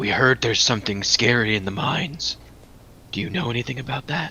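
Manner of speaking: serious hush. Role-playing a character matching a Triton woman's hushed tone, in a lowered voice. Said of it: "I also match her by lowering my voice".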